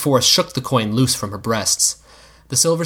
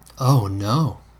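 softened, gentle, soft tone. After the hurt man says he was hit today, she answers with a softened voice. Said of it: "she said with a softened voice".

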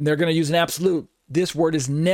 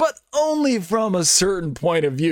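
dry, joking, playful sarcasm with swooping sing-song; 3 semitones higher than usual. Closing on what biblical Unitarian claims about the word: sarcastic tone with humor. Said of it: "You can hear the sarcasm in my voice and the humor".

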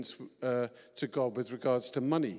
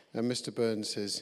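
usual speaking voice

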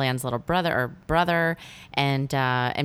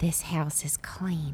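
soft, medium-like character voice; 2 semitones higher, 6 dB quieter than usual. Discussing a horror film's medium, the speaker quotes her line: Tangina Barrons impression. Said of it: "do that voice".

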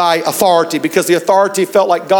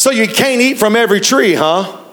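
mock doubting, snide, needling sarcasm; 4 semitones higher than usual. Modernizing the garden scene, acting out Satan, mock-sarcastic. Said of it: "starts sarcastically says".

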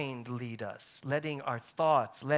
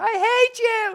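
put-on piercing, shrill, very high, very loud child's tantrum scream; 13 dB louder than usual. Retelling carrying her home under his arm while she screamed the whole way: retelling a child's screaming. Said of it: "She's just screaming".

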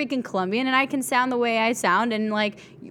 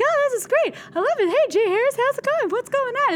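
very high, squeaky helium-sucked voice; 13 semitones higher than usual. Speaker shows how their voice sounds on air in the SportsCenter studio: high helium-like voice. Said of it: "What helium did you have?".

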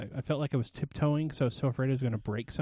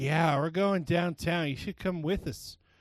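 affected, tipsy, boozy drunken voice, acted out; 4 semitones higher than usual. Retelling a woman's invitation to come downtown, imitating a drunk woman. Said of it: "the affectation I put on my voice, she had been drinking a lot".

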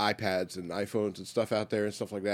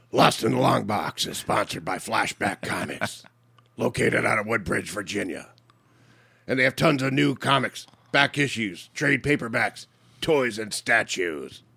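put-on gravelly superhero voice; 5 dB louder than usual. Co-host asks to read the show's sponsor message: gravelly Batman voice. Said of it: "Can I do my, like, gravelly Batman voice?".

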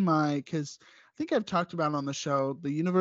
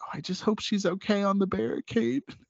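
put-on whisper, higher pitch; 4 semitones higher than usual. Retelling what a cast member's mom kept saying during the show: imitating someone whispering. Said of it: "she kept whispering to me".

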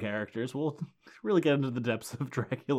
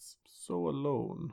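creaky mournful put-on voice; 2 semitones higher, 4 dB quieter than usual. Recounting a scene, the speaker is asked to say the line: mock-sad Dracula voice. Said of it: "Do you wanna say that one in Dracula voice?".

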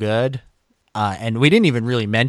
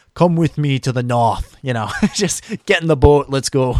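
terrible put-on northern English accent; 3 semitones higher, 4 dB louder than usual. Imagining his hoped-for answer, in a terrible northern english accent. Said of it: "That's my terrible northern accent for you".

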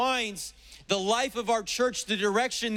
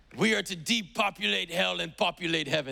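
put-on German accent; 3 semitones lower than usual. Quoting an evangelist's words in imitation: Reinhard Bonnke German accent. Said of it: "That's my Reinhard Bonnke accent".

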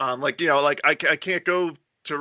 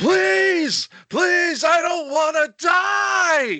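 very high, very slow, drawn-out screaming; 5 dB louder than usual. Speaker retells a man in a grocery store; retelling a man's screaming. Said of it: "There's this guy screaming at the top of his lungs".

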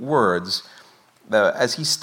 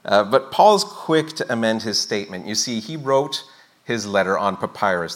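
normal talking voice

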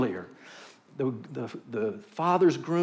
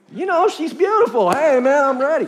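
play-acted, keen, eager voice, raised; 12 semitones higher, 11 dB louder than usual. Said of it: "he was eager".

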